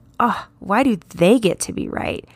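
a little sassy, attitude behind it. Showing listeners how to ask themselves the question, sassy, with attitude. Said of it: "put some attitude behind that".

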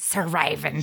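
pirate-like delivery. Imitating how a character on the show says his line, pirate-like voice. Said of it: "he sounds like a pirate".

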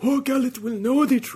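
very high, loud, projected character voice. Joking that every podcaster quotes Rogue One this way: Saw Gerrera voice. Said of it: "developed their Saul Guerrero voice".

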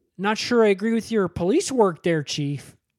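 put-on Minnesota-type accent. Retelling a friend's favorite movie, quoting a character's line, in a Minnesota type accent. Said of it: "He does kind of North Dakota act, Minnesota type accent".

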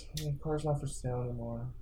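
very quiet, put-on, saddest sorrowful voice. Retelling telling a buyer the car is gone: retelling a put-on sad voice. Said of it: "with the saddest sound in my voice".

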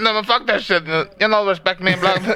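mock angry ranting. Imagining a friend ranting after a bad day at work: imitating someone ranting. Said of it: "I can see him bitching and ranting on".

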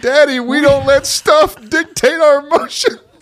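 put-on child's very loud, shrill scream at top of lungs. A dad re-enacts his son at the Target checkout, retelling a child screaming. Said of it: "he's literally screaming".

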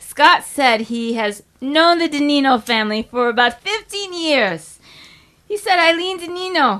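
loud, high Italian accent. Reading the next line aloud in a put-on italian accent. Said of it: "I want to read the next line in Italian accent".

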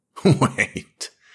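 words spoken through laughter. Narrator reading Smith's line to her, laughing. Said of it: "laughed Smith".

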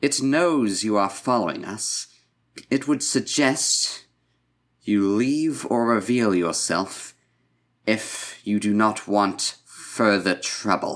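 very loud, booming, commanding delivery. A character hovering and glowing with biotic energy addresses a follower: very loud voice. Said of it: "just say in a very loud voice".

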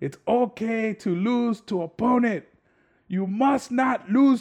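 put-on yelling. Retelling a scene, the speaker acts out one man yelling at another. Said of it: "And he like yells at him".

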